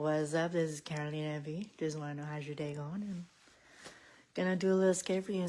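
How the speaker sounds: put-on quiet voice. Mimicking their own usual greeting to viewers, imitating own quiet voice. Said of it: "I get, like, all quiet".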